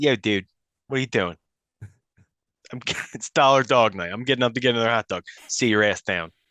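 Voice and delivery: put-on Philadelphia accent coming out. Acting out a fan reacting during the stadium wave: philly accent. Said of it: "Philly accent comes out".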